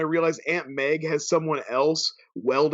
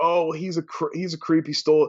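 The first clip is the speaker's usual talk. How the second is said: ordinary talk, nothing marked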